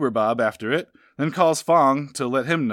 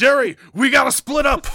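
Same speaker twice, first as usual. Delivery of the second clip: loud, very high, bursting delivery; 12 semitones higher, 5 dB louder than usual. Retelling a game scene where a character bursts in: Kramer from Seinfeld impression. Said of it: "bursts in like Kramer from Seinfeld".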